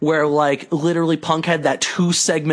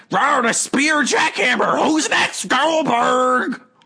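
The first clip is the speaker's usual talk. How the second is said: cocky, taunting tone, pitched very high; 9 semitones higher than usual. Retelling what a wrestler said after a rival's boasting: Goldberg impression. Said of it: "that's a pretty good impression".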